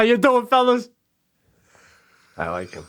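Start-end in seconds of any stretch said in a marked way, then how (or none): 0.0-0.9 very high attempted put-on character voice. Greeting a group of golfers on the course: Andy Garcia impression. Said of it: "I'm trying to do an impression".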